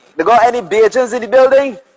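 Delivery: high, loud club DJ hype call.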